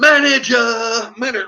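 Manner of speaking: loud, insistent repeated yelling, words hammered out. Retelling an argument where he demanded the manager, retelling his own screaming. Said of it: "like this".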